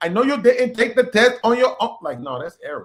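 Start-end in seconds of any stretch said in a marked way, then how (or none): 0.0-2.0 badly done put-on Chinese accent, high pitch. Retelling what a teacher said about a test: imitating a chinese accent. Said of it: "How do you do Chinese?".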